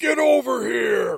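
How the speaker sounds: very high, shrill, gritty, raspy, loud yell. Recalling a movie moment, imitating Scorpion's "Get over here". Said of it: "And you hear the".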